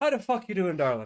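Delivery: put-on loud, high, strong full-on Irish accent. Describing a coworker who comes in, the speaker imitates Irish Mary's full-on Irish accent. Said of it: "full on Irish".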